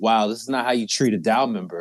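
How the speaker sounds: open, mock-wounded sarcasm. Retelling own remark in a Discord: imitating own sarcastic remark. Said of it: "So I was being sarcastic and shit".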